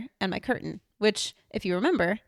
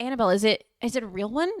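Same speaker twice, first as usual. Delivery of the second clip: plain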